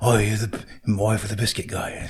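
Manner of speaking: put-on husky voice. Retelling what a local author said to the speaker's wife, husky Simon Bell impression. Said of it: "he's got that husky voice".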